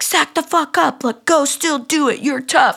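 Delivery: mock high yelling. Imagining someone yelling at the speaker to push through: imitating David Goggins yelling. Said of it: "David Goggins, like, yelling at me".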